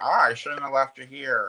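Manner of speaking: tired, weary trailer-park stepmother voice. Imitating Denise, who sounds like a trailer-park stepmom. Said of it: "Denise kind of sounds like a stepmom from like the trailer park".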